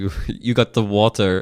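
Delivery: bad, accidental French-sounding accent. Trying an impression line again, the speaker slips into an accidentally French-sounding accent. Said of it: "I sounded French".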